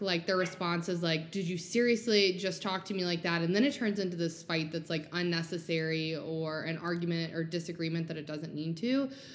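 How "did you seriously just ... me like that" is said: normal talking voice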